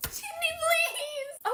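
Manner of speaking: very high, shrill, high-pitched shout. Pleading with a friend to keep a secret: yelling. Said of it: "what is all this yelling about?".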